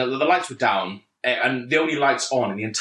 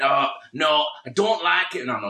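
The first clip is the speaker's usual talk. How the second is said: attempted, put-on northern English accent. Retelling what he said in response, in an attempted northern accent. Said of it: "Shall I attempt to do a northern accent?".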